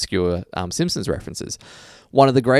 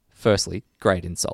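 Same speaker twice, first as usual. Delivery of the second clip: plain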